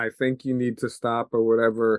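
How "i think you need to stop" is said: usual speaking voice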